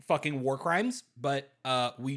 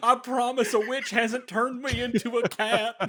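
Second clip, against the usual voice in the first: put-on Kentucky accent, very high and loud; 9 semitones higher, 6 dB louder than usual. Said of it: "his Kentucky Fried accent".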